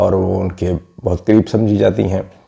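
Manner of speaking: normal talking voice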